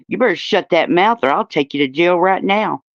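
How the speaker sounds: ordinary talk, nothing marked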